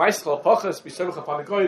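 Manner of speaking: plain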